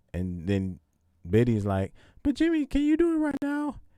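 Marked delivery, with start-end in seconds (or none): 2.2-3.7 very high-pitched woman's voice. In a comedy bit about a couple, the speaker voices Betty talking to Jimmy. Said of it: "let me do a lady's voice".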